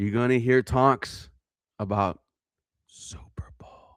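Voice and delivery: whispered aside. Predicting Super Bowl talk after a win: whispering. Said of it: "And I'm whispering that".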